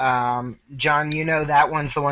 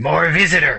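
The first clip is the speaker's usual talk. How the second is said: voice like stone grinding on stone; 4 dB louder than usual. Game master voicing a stone voice calling from above the players: grating stone voice. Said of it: "a grating stone voice come from above you".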